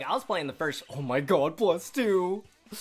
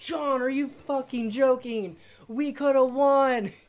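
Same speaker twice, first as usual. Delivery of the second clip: acted scream, pitched higher; 9 semitones higher, 4 dB louder than usual. Retelling yelling at a teammate who missed the ko: imitating own past screaming. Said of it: "I was literally screaming at him".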